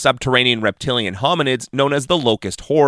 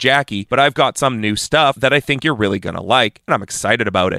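ordinary delivery

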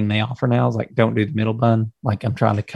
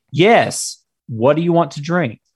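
play-acted irritated, fed-up, annoyed tone; 5 semitones higher than usual. Retelling how she answered your order for no middle bun, imitating someone's annoyed tone. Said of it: "It was that tone".

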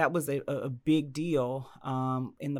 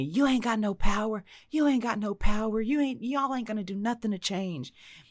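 put-on full-on shouting, repeated, raised and high-pitched; 8 semitones higher than usual. Retelling a meeting where a man starts yelling: imitating a man yelling. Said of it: "this guy starts yelling at me".

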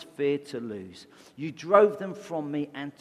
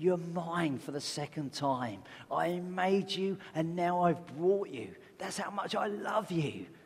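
soft, voiced, hushed stage whisper; 3 semitones higher, 5 dB quieter than usual. Retelling a story of a boy speaking to his boat: imitating a boy half-whispering. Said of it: "you could hear this boy whispering to this boat".

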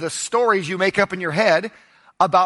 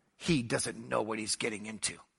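put-on muttering under breath, lower and quieter; 9 semitones lower, 14 dB quieter than usual. Retelling what an older lady said about the boys: imitating someone muttering under her breath. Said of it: "she muttered this under her breath".

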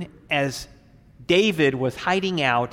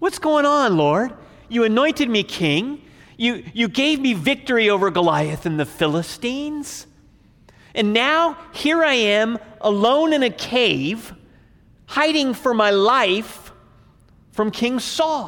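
mock, pitched-up complaint cried out; 8 semitones higher, 3 dB louder than usual. Acting out a complaint to God while hiding: David pouring out his complaint. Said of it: "pour out his complaint before the Lord".

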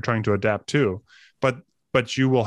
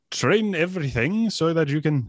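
put-on Austrian-sounding accent, pitched higher; 5 semitones higher than usual. Quoting Ido Portal's training advice: bad Ido Portal impression. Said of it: "that's not his accent at all".

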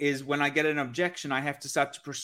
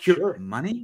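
rising, question-like tone on money; 3 semitones higher, 3 dB louder than usual. Teaching ways to probe on a sales call, demonstrating a rising up tone. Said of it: "like just like with an up tone".

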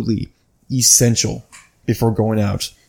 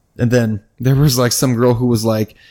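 normal talking voice

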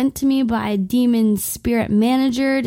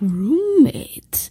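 creepy put-on voice, higher; 4 semitones higher than usual. Retelling a phone call from a roommate caller: imitating a creepy caller. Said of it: "unbelievably creepy the way he sounded".

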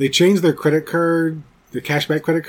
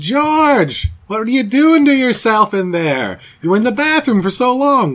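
put-on higher New York Queens accent; 6 semitones higher, 4 dB louder than usual.

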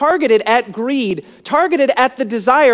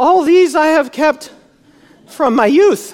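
put-on nervous speech, higher pitched; 3 semitones higher than usual. Imagining how a man replied once things went upside down, acting out nervous speech. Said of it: "clears his throat and says nervously".

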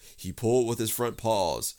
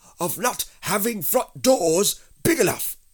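very high, raised, cross and grumpy tone; 10 semitones higher, 7 dB louder than usual. A stuck bear answers the one pulling him, crossly. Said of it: "said Pooh crossly".

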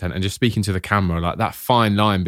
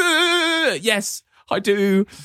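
high, slow, hurt mock whimper. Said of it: "and you go".

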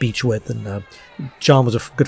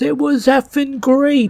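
put-on shrill, very high, long-dragged yelling scream. Retelling Rosario's answer about the fried chicken: imitating Rosario screaming. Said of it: "She just screamed it out".

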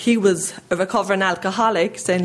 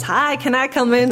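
put-on American accent, higher; 5 semitones higher than usual. Recalling a knock at the family's door, the speaker imitates Craig Ledbetter's American voice. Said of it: "and the American voice".

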